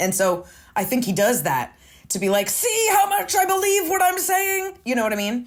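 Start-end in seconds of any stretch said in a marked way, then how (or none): 2.5-4.8 put-on, very high, shrill, forceful shouting. Mimicking a man who shouts to seem credible: imitating his shouting. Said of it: "he shouts to seem credible".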